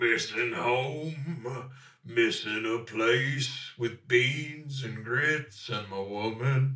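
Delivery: put-on dirty cowboy voice. Acting out a cowboy in a shared improvised scene, dirty cowboy voice. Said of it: "dirty cowboy voice".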